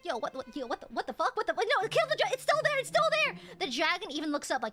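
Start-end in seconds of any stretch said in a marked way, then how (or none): 0.0-3.3 panicked, frantic crowd shouting. Voicing a panicking crowd as adventurers flee: panicked crowd shouting. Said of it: "the crowd goes like".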